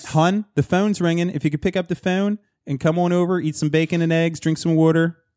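put-on Philadelphia accent. Joining a Philly bit after praise for the accent, in a Philly accent. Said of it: "You do that very well".

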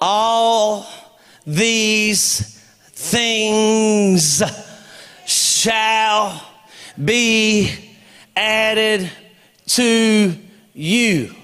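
very slow, halting, deliberate, words spaced apart. Quoting scripture to listeners, in a slow, deliberate delivery. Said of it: "I'm saying it slow on purpose".

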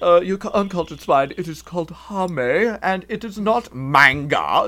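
mock snooty, culture-snob voice.

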